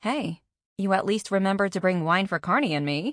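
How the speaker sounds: ordinary delivery, nothing marked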